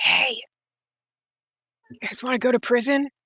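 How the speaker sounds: whispering. A character opens a door a crack and speaks through it: whispering through a door crack. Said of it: "And then just whispers through the crack".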